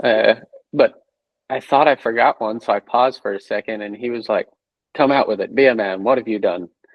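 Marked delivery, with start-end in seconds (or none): 5.0-6.7 put-on burly Irish man's voice. Speaker recounting a confession, quoting the man who pressed him, imitating a burly Irish man. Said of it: "big burly Irish man telling you be a man".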